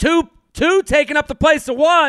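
acted loud shouting. A speaker recounts protesting a guitar case on a plane, retelling a loud shout. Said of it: "And I loudly said".

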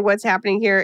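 ordinary delivery

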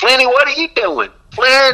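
put-on loud, very high Alabama accent. Act out how Vic called you on it when you were out of line, in Vic's loud Alabama accent. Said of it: "in that loud Alabama accent".

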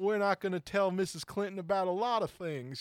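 devilish, mischievous delivery. Retelling a sketch where a performer played Clinton: devilish Bill Clinton impression. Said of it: "devilish, uh, you know, Clinton impression".

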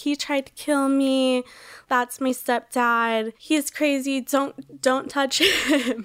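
put-on hysterical screaming and crying. Retelling screaming to bystanders after an attack: imitating someone screaming. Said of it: "screaming, like".

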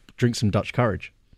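normal talking voice

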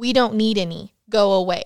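put-on gruff angry voice. Retelling a story, a voice from inside the room answers: gruff, angry voice. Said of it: "A gruff, angry sounding voice says".

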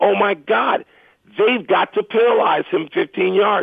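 put-on, drawn-out, mild protesting cry. Retelling own reaction while watching a football play: imitating own screaming. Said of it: "I started screaming".

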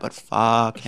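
confiding, conspiratorial, just-between-us throwaway aside. Saying something just between us, said very quietly. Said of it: "I'm saying it really quiet".

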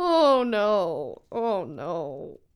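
on the verge of tears, about to cry. Looking at a photo with a friend, on the verge of tears. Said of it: "I'm like about to cry".

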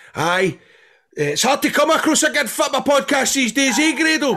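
mock bantering shout, very high and rising. Retelling what fans behind them shouted: imitating someone shouting. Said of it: "they were shouting".

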